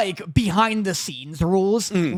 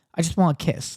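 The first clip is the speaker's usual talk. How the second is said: put-on sheepish girlish tone, lower; 2 semitones lower than usual. Retelling a scene where a confident girl is asked what she wants: mock-sheepish, genuine voice. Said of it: "she turns like very sheepish and like genuine".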